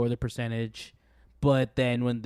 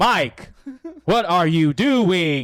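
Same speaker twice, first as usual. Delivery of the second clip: very loud, put-on mechanical robotic voice; 7 semitones higher, 8 dB louder than usual. Describing a game character who talks awkwardly: imitating a robotic android voice. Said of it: "all robotic".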